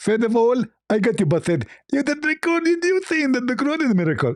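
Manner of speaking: mock, high-pitched, gloating voice.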